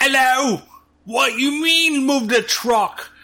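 slow, high-pitched put-on British accent. Retelling how a character first spoke: imitating a British accent. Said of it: "start with a fucking British accent".

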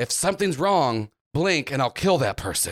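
hushed voice. Voicing a character who secretly warns a girl: whispering. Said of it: "whispers her, he's like".

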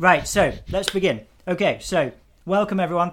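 very loud, high voice, talking mid-chew with full mouth. Opening the session for listeners, talking with a mouthful of apple. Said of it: "I've got a mouthful of apple now".

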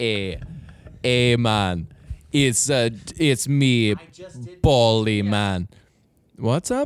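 put-on Jamaican accent. In a comedy bit, introducing a Jamaican vape salesman character in a Jamaican vape salesman voice. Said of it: "Jamaican vape salesman".

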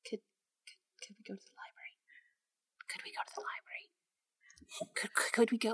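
stumbling, very quiet, breathy whisper. Retelling nagging the others while looking at a map, retelling a whispered question. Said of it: "Why are we whispering?".

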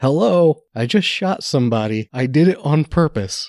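high, slow, drawn-out, acted-out calling shout. Retelling a movie scene where the villain calls out to the street: imitating a villain yelling. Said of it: "he yells out".

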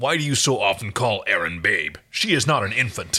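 frustrated, exasperated tone. A narrator reads a character's question in a story, in a frustrated tone. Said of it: "Dargo's tone was that of frustration".

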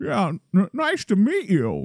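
put-on hesitant, stumbling, sing-song impression voice. Retelling a TV scene of a character meeting someone: Jimmy Stewart impression. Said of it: "Like he's Jimmy Stewart".

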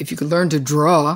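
put-on sarcastic tone. Retelling a remark the husband used to make: imitating someone being sarcastic. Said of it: "he used to say something sarcastic".

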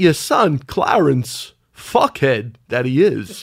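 very slow delivery, every word drawn out. Doing an impression after the others keep asking to hear it: Christopher Walken impression. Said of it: "Don't you do a great Walken impression?".

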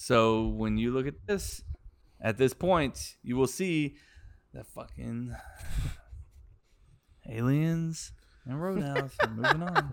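bored, flat, unexcited, unenthusiastic readout. Announcing the bracket results to the other speakers: unenthusiastic. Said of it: "Don't sound too enthusiastic about it".

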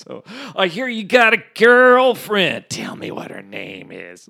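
mock-mean delivery. Quoting a man asking the speaker about his girlfriend, saying nice things meanly. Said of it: "he would say nice things mean".

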